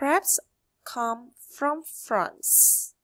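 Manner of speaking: slow, drawn-out reading aloud.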